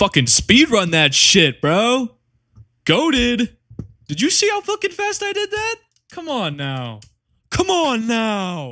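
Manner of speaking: very high, loud, worked-up, excited and swooping. Reacting to finishing a fast speedrun, excited. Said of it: "I got a little excited".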